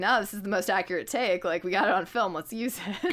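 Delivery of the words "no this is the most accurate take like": plain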